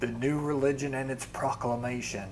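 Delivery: normal talking voice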